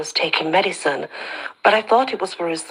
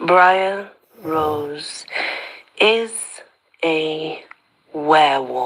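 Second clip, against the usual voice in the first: very slow, halting, word by word. Telling Alec the big news, speaking really slowly so he won't miss a word. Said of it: "I speak really slowly".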